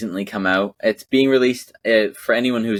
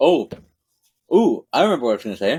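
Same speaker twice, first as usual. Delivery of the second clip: talking with mouth full of ice, higher pitch; 3 semitones higher than usual. Remembering what they meant to say: talking with ice in mouth. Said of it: "I have ice in my mouth".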